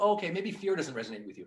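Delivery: ordinary delivery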